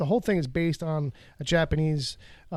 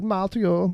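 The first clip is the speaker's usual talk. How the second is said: put-on Greek accent, higher and louder; 4 semitones higher, 5 dB louder than usual. Mimicking how a character talks in a trailer: imitating Elektra's accent. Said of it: "the accent kinda comes and goes".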